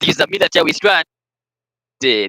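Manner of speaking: put-on Boston accent. Reading a part aloud for the others: put-on Boston accent. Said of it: "a Boston ass voice".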